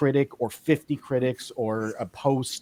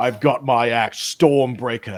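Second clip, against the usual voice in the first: put-on Australian accent in a heroic voice; 4 dB louder than usual.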